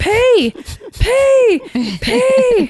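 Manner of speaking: play-acted, very high, shrill, sing-song repeated yelling. Retelling urging a 20-pound puff to pee, retelling yelling pee. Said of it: "So I'm yelling pee at this 20-pound puff".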